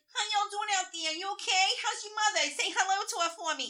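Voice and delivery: put-on very high, loud New York accent. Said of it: "he'd be like".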